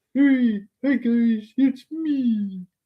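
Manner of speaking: high, slow, sweet, dopey lovable voice. Doing a voice for the other speaker to guess: gullible, lovable voice. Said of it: "it's a gullible, like, lovable voice".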